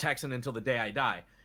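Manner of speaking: ordinary talk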